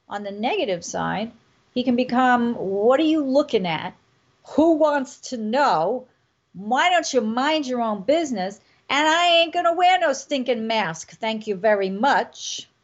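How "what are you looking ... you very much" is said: New York accent. Acting out someone's negative side, in a New York accent. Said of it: "You like my New York?".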